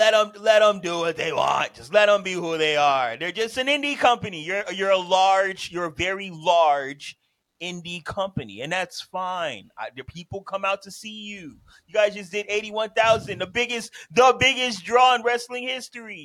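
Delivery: booming, loud, high, fake-sincere sarcastic tone. Arguing about a wrestling company with other speakers: put-on sarcastic praise. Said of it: "This man Sylvan is being sarcastic as hell".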